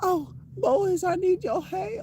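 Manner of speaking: put-on high, slow, drawling Southern belle accent. Demonstrating a Final Fantasy Nine diva's voice: Ruby's Southern Belle accent. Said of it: "speaks with a Southern Belle accent".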